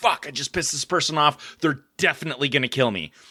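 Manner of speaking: frantic, fearful, panicked inner voice. Retelling being followed by a truck: reenacting own fear. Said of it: "my heart's racing".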